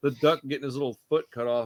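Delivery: ordinary talk, nothing marked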